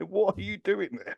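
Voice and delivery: high-pitched, loud, mocking shout.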